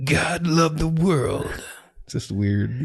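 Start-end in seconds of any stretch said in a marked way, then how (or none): 0.0-1.5 slow, half movie-trailer announcer voice. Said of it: "halfway to like the movie trailer voice".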